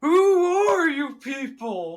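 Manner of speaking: very high, loud, all-in cartoon voice. Acting out a man who realizes the voice isn't the old woman's: Patrick Star voice. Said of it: "Fucking full Patrick Star".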